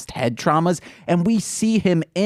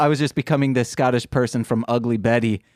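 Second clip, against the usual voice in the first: ordinary talk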